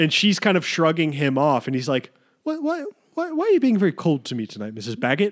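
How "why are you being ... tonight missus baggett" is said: put-on British accent, much higher. Retelling a movie scene, quoting a flirtatious cop, imitating a British accent. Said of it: "In a very British".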